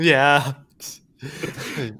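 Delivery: ordinary delivery, nothing marked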